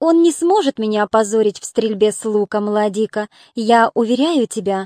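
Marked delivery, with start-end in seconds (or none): none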